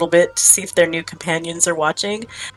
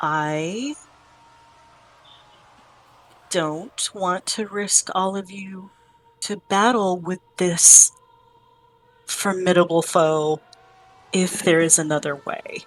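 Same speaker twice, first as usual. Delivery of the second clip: very quiet, hushed, softly spoken; 4 dB quieter than usual. Role-playing a game, turning to a companion character: very quietly. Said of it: "I say very quietly".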